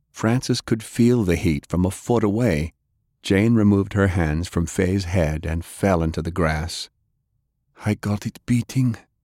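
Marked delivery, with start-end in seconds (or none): 7.9-9.0 gasping, higher pitch. [name] falls into the grass after working on Faye; gasping. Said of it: "[name] gasped".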